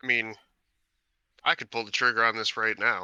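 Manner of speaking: very nonchalant, casual, unbothered, offhand tone. Playing a character at the table, saying it aloud in a very nonchalant voice. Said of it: "in a very nonchalant voice".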